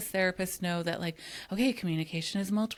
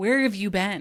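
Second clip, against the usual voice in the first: put-on angry voice, louder; 6 dB louder than usual. Retelling the skit role of Donna, who confronts a late Chuck: imitating pissed Donna. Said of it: "Donna's pissed".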